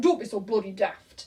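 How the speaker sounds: put-on northern English accent. Quoting the speaker's dad brushing off a coronavirus worry, in his northern accent. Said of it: "in his northern accent".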